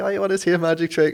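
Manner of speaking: squeaky, high, keen little voice. Recalling Lee approaching people on the beach with a magic trick: imitating Lee's high voice. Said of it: "Like such high voice and everything in it".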